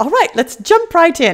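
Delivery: put-on high strange British accent. Quoting a show host's segment opener, in a weird Mary Poppins voice. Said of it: "just me talking in my weird Mary Poppins voice".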